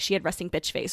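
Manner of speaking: ordinary talk, nothing marked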